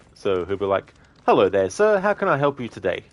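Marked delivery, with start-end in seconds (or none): 1.2-2.9 high, raised, polite voice. Retelling a Monty Python shop skit, shopkeeper greeting: polite Monty Python shopkeeper. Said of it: "the person who's serving him says something polite".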